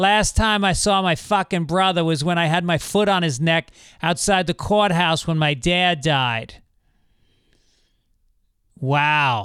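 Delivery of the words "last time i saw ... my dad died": put-on Boston accent. Retelling what a mechanic said to his friend at a tire place, in a boston accent. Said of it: "I should do a Boston accent".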